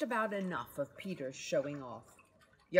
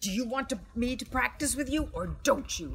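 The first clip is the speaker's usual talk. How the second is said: hissing, sibilant, pitched-up delivery; 7 semitones higher than usual. Henry to Peter, right after Mum scolds him: hissed. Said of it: "Hissed Henry".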